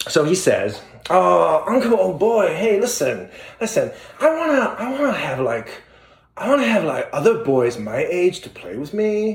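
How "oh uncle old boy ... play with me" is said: put-on California surfer accent, much higher. Retelling how he asks his uncle for playmates, in a California surfer accent. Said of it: "it's like a California surfer version of".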